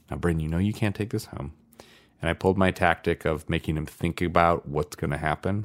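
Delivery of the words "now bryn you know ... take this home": hushed, very quiet voice, much quieter. Retelling how they talked to a boy while putting on his shoes, retelling speaking very quietly. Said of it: "him very quietly".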